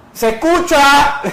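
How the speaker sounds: sharp, very loud, very high, shrill shout. Retelling how someone in the room shouted during audio problems, mock shouting. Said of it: "la Juan le gritó".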